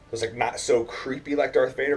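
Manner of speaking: normal talking voice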